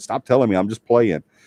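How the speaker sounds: irritated, aggravated, fed-up tone. Retelling own words to a daughter giving game advice: retelling an aggravated complaint. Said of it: "I got aggravated".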